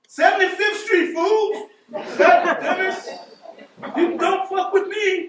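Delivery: very high, very loud, shrill, furious scream. Retelling fighting off guards on a bench: imitating yelling at top of lungs. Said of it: "yelling at the top of my lungs".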